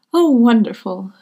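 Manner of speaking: very loud, thrilled, joyful, elated cry. Narrator voicing a mother hearing that her son has reached an agreement, excited and elated. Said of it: "clasped her hands together in excitement".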